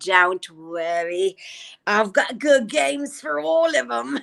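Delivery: put-on English accent. Retelling a scene's line in a put-on Drusilla voice. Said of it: "my Drusilla accent".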